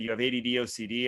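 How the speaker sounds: ordinary delivery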